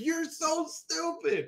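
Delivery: high, slow yell. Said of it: "I'm that one person in the theater that's yelling".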